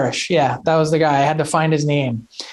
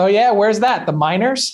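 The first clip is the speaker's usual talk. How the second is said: put-on dry, flat, unbothered deadpan; 4 semitones higher than usual. Retelling Chris Pronger's answer when asked about Adam Burris: deadpan Chris Pronger imitation. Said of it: "Prong's just totally stopped, deadpan".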